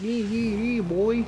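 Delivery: very high, slow, put-on Newfoundland accent. Describing how Newfoundlanders talk: imitating a Newfoundland accent. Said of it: "Newfies have a really funny accent".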